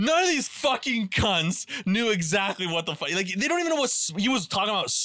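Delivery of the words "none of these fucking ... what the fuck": screaming yell, pitched higher. Retelling a rant at the tv in the living room: retelling own past screaming. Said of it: "screaming in the fucking living room".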